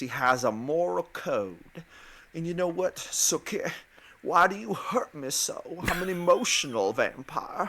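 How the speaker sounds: genteel Southern gentleman accent. Describing the main vampire character, speaker shows how he talks: Bill Compton Southern accent. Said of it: "He talks like this".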